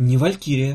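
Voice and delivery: ordinary talk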